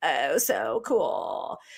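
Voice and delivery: creaky, low vocal fry, slow and dragged out. Showing the TikTok style of men speaking: slow, low creaky vocal fry. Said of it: "that kind of creaky voice like this".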